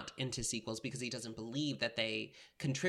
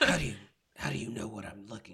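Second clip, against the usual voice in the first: put-on rough, low-pitched voice; 4 dB louder than usual. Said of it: "Yeah, it's like that".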